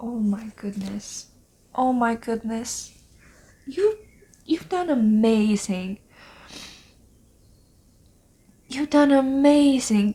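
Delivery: voice close to breaking into tears. Talking to someone about the work they've done, about to cry. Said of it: "I'm gonna cry, I'm going to cry".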